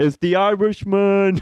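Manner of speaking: very high-pitched calling out. Showing the others an impression just seen online: Robert De Niro impression. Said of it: "I just saw somebody doing an impression of him".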